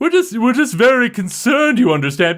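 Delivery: very high, big, echoing, booming leader voice. Imitating the group leader heard from the front of the group, in a big booming voice. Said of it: "it's just it's a big voice and it echoes back".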